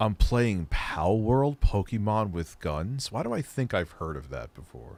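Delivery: deep, hushed, sultry put-on voice. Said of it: "Why am I talking in this deep, sultry voice now?".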